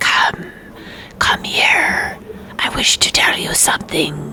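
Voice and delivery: creepy, hushed, whispered creature voice. Voicing a creature with close eyes calling players nearer: whispering creature voice.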